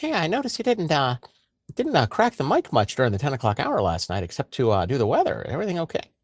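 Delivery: high voice with swoops. Radio host quoting his program director's question to him, in a high-pitched voice. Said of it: "it is a high pitched voice".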